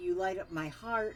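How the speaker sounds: ordinary talk, nothing marked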